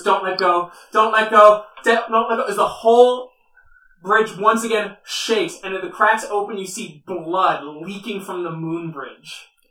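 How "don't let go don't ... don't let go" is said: loud, frightened, terrified voice with repeated pleading tone. Voicing a character who has just been caught, terrified plea. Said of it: "she's looking at you terrified as she goes".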